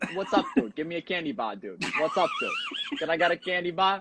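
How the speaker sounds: fake Boston accent, sing-song, swooping and high. Wearing a Bruins hat, ask for a candy bar the way they'd say it, mock Boston accent. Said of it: "that's probably how they say it up there".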